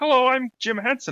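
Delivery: very high, loud voice. Mocking a newer performer of Kermit the Frog: Kermit the Frog voice. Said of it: "Steve Whitmire doing Kermit the Frog nowadays, where he's like".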